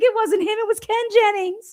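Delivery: put-on very high-pitched elderly woman's voice. Retelling what the older woman asked: imitating Dottie. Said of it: "She's like".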